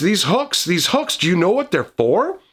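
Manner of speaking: wonder-struck voice full of awe. Voicing a character who studies hooks on a wall: voice full of awe. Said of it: "there's awe in his voice".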